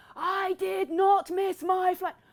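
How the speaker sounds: shrill, very loud, high bellow, every word stretched. Retelling a phone call with a mother who cannot hear: retelling a scream down the phone. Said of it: "I'm literally just screaming down the phone".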